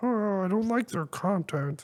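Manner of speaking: very high, derisive, mocking nerd caricature voice. Mocking the people behind a shadow ban on an app: mocking nerd voice. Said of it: "a bunch of fucking nerds going".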